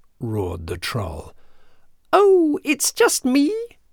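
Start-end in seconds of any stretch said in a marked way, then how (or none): 2.1-3.5 small, very high-pitched voice. Reading a fairy tale aloud, the narrator voices the smallest billy goat in a tiny voice. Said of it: "in his tiny voice".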